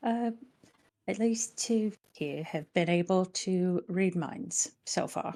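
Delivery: hushed, quiet, secretive half-whisper murmur. Playing a character who leans into a companion's ear: half-whispering in character. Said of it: "quietly whisper".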